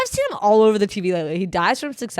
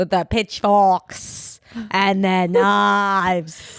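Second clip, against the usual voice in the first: very slow put-on English accent, drawn-out knives. Joking with others about spoiling the audience, in an english accent. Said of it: "That was my English accent".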